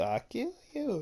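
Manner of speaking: very high, squeezed-up puppet-show voice. Retelling an anime line the way a ventriloquist puppet would say it: Achmed the Dead Terrorist voice. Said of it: "he just sounded like Ah-, like Ahmed from Jeff Dunham".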